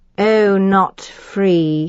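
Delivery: menacing, level, unvarying monotone. Narrator reads a man's reply to the narrator, in a dangerous monotone. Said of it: "he said in a dangerous monotone".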